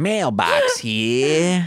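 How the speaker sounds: swooping, pitch-swinging gangster voice with here drawn out. Retelling a scene, the speaker plays Mailbox arriving with mail: Mailbox's marionette-gangster voice. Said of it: "I sound like a marionette with a Tommy gun".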